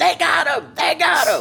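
frantic high-pitched screaming. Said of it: "stormed in screaming".

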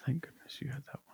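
soft, unvoiced whisper.

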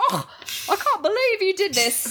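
put-on Scottish accent, pitched very high. Retelling a scene where McGonagall scolds students sent to her office: McGonagall Scottish accent. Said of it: "actually, she's Scottish. She's like".

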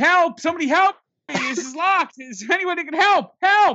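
very high, shrill, loud screamed cries. Locked inside Citi Field, the speaker retells yelling for help, re-enacting screaming. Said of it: "So I'm screaming".

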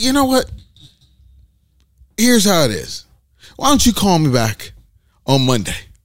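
play-acted, strictly businesslike tone. Retelling own reply to a caller: retelling a full business tone. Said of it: "you went full business fresh on her".

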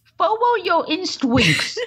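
put-on Boston accent. Retelling what a witch said: imitating a Boston accent. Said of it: "doing full Park the Cat, like, Boston".

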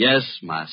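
impertinent, sarcastic, falsely dutiful tone. Answering when called by name, calling the other master: sarcastic. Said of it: "Just a little less sarcasm".

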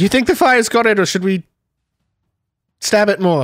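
put-on loose, sketchy, vague British accent. Voicing Irina, who asks another character a question: vague British accent. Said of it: "just vague British accent".

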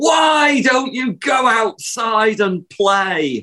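very high-pitched, fed-up, despairing yell. Speaker recalls mother bursting into the bedroom, imitating mother yelling. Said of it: "she kind of yells".

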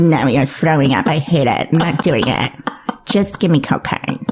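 low, casual, careless, shrugging offhand tone. Retelling how the other speaker reacts, imitating them: mock cavalier voice. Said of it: "I love doing that voice".

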